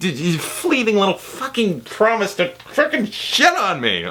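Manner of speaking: furious, over-the-top angry, swooping rant. Ranting about a movie's early promise: over-the-top angry. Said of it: "I'm getting a little over the top angry".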